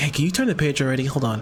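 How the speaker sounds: put-on impatient voice. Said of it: "Zeltra's like".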